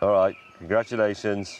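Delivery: not sounding very happy. Congratulating someone on a call, not sounding so happy. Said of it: "He doesn't sound so happy".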